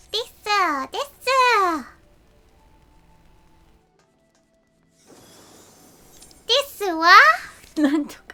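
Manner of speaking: loud, cute voice, every desu drawn out. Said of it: "cute Tataru Japanese voice".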